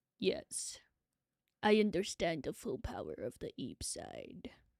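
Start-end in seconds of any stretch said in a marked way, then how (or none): 1.6-4.5 hushed, breathy whisper. Repeating another speaker's line as Darth Vader: Darth Vader voice. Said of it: "How do I make Darth Vader sound?".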